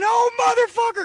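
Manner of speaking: very high-pitched crying scream. Speaker retells a man who bent over once the back door closed, imitating Bubba's high-pitched crying. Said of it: "Bubba had a high-pitched voice".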